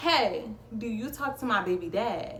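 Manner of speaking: normal talking voice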